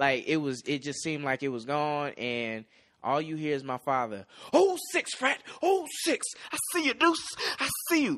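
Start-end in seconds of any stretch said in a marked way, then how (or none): 4.5-8.2 put-on very high, eager, excited cheering. The speaker recalls what his father shouted to him; imitating his dad yelling. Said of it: "there's video footage of my dad yelling like this".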